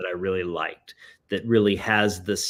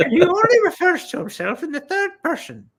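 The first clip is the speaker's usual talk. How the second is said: very high-pitched leprechaun-like voice. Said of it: "he sounds a bit like a leprechaun".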